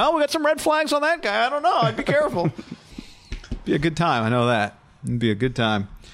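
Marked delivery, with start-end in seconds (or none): 0.0-2.5 high, knowing voice like a big shot. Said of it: "I wanna let them know, like".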